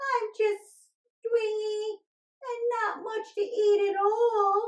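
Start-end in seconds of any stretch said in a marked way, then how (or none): 0.0-3.9 put-on little billy goat voice, higher. Playing a scrawny billy goat pleading with a troll: little billy goat voice. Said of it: "I'm just a scrawny little billy goat".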